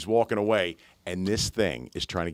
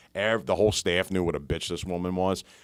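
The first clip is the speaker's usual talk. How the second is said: usual speaking voice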